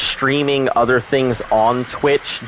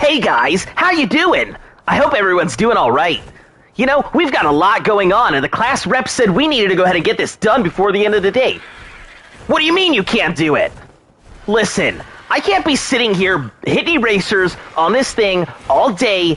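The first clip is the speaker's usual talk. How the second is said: cliché, high anime hero voice; 8 semitones higher than usual. Asked for an animated character voice, the speaker does a stereotypical anime protagonist voice. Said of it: "my stereotypical, like, anime protagonist".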